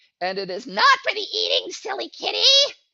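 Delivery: very high, loud, swooping mutant creature voice. Speaker doing a voice for a mutant he describes, mutant creature voice. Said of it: "I have to do a voice for that".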